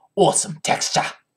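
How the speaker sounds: put-on Australian accent. While painting with a chalk brush, the speaker repeats a phrase in Leshy's Australian accent. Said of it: "That's how Leshy would say it".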